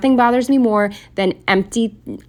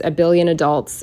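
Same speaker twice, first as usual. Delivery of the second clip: ordinary delivery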